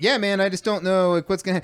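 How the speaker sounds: fast, nerdy, clueless, dorky male voice.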